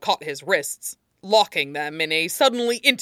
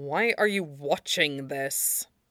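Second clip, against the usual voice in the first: bored, suspicious, low and quiet voice; 7 dB quieter than usual. Glaring at his computer screen, he questions the man beside him, demanding in low tones. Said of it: "Aizawa demanded in low tones".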